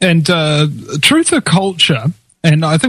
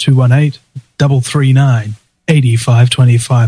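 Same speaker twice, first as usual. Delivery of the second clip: slowed-down delivery, much lower pitch; 5 semitones lower than usual. Show host repeating the call-in number for listeners: saying it slower. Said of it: "Say it a little bit slower".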